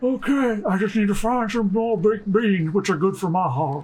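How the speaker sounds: whispery put-on outlaw character voice. Voicing Arthur in reply to Dutch: Arthur Morgan voice. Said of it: "I'll hand Arthur because I can do that".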